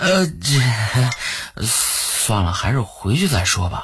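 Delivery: embarrassed. Oscar, after Dai Mubai brings up his third soul ring skill, speaks awkwardly. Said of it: "他尴尬地说".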